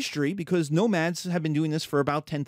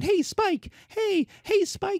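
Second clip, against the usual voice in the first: very high, slow, puppy-like voice. Comparing the Persians to the little puppy following along: little puppy voice from Bugs Bunny cartoons. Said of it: "the little puppy that's following along".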